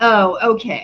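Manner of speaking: thick cutting sarcasm. Retelling what a woman in line said back: imitating a sarcastic reply. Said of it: "Just totally sarcastic".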